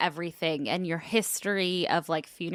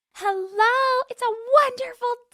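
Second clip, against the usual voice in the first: put-on cheerful voice, much higher pitch; 5 dB louder than usual. Quoting how the other speaker answered a call that morning: imitating a cheerful greeting. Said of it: "I woke up in such a good mood today".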